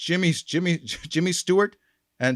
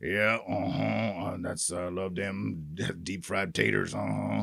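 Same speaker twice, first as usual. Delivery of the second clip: soft, muttered mumble with grunts at the ends; 7 semitones lower, 8 dB quieter than usual. Speaker discusses character voices and imitates one; Sling Blade voice. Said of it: "he would talk like this".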